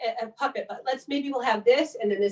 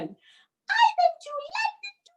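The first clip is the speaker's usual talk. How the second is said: very high, slow little cat voice; 8 semitones lower than usual. Acting out the pussycat rhyme, the cat answering in a high kitty cat voice. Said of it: "Maybe that person should have a low voice".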